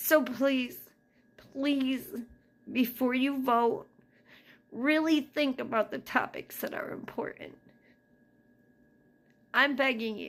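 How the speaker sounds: crying while talking. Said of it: "I'm sorry for crying".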